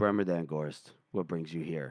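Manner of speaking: put-on dead-level toneless monotone, very flat and low. Retelling a story where she looks up at him and speaks, in a very flat voice. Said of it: "Very flat voice".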